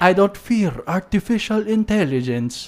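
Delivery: bad Mexican accent drifting into Italian. Repeating a film quote-maker's words for a listener, in a bad Mexican accent that sounds Italian. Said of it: "you more of sound like Italian".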